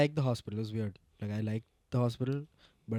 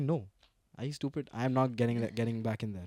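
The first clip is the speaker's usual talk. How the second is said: ordinary talk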